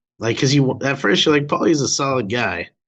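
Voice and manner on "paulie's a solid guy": ordinary talk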